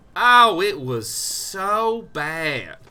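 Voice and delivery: put-on southern drawl, very slow and loud. Commenting on their last game, in a drawn-out southern accent. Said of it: "what you do with a southern accent is you just say the adjective for a long time".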